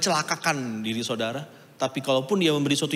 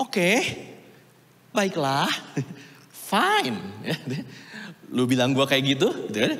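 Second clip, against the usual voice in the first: sarcastic, grudging, swooping sing-song. Acting out the master's reply to the lazy servant, retelling a sarcastic reply. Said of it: "menangkap gak nada sarkastiknya".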